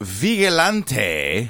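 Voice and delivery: put-on South American accent. Introducing the word 'vigilante' in a put-on South American accent. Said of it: "because you put on that accent".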